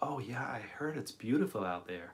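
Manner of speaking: drawl accent impression. Retelling a woman's reply about the Grand Canyon, imitating a drawl accent. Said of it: "she had a fantastic like drawl accent".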